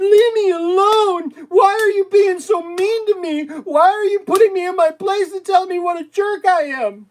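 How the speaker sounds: very high, shrill, loud, sobbing whine. Mocking people who attack others and then complain: imitating someone whining. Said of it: "they're whining at the same time saying".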